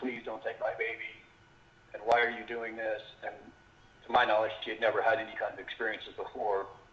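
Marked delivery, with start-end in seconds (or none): 0.0-3.0 mock desperate pleading voice. Retelling what a woman said to her captors, imitating someone pleading. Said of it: "she was pleading with them".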